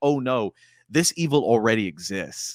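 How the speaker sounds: ordinary talk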